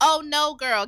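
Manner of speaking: loud, shouted heckling.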